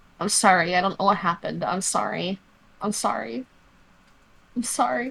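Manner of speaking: soft mumbling mutter under the breath. Retelling moving a man out of a pool of blood, muttering under breath. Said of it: "whole time just muttering under my breath".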